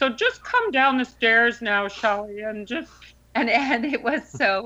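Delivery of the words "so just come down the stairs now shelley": puppet-frog voice, much higher. Recalling how the director gave instructions, in a Kermit the Frog voice. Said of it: "He had a little bit of a voice like that".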